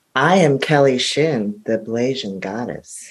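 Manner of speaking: low, sexy, mysterious, seductive, sultry voice. Told to deliver a grand self-introduction, in the sexiest voice. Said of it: "say Blazing in your sexiest voice".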